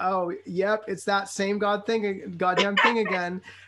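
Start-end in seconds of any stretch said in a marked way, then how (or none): none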